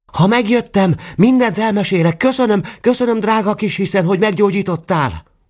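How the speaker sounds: very high shout, called back. Someone running down the stairs after leaving calls back, shouting back. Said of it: "még visszakiabált".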